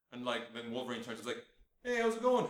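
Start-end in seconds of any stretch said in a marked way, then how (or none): 1.8-2.4 put-on higher, louder Canadian accent. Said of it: "doing the Canadian accent".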